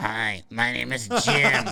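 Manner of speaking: drawn-out, very slow robotic electronic voice-box voice. Telling of a man she mistook for the TV, the speaker imitates his greeting: electronic voice-box voice. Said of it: "he had one of those one of those voice boxes".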